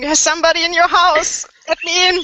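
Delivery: desperate, frantic, very high-pitched shriek. Player in a role-play trying to pull someone away from a window, screaming. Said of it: "I'm screaming".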